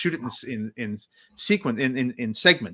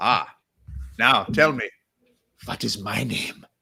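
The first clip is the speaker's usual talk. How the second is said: put-on slow, menacing, scary German-accented voice. Recalling joking around between camera setups, imitating the director questioning him: imitating a scary German director. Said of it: "a very scary German director".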